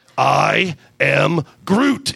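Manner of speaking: low, sultry voice. Narrator reading a story, giving Groot's line in a deep, sexy voice. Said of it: "he said in a deep, sexy voice".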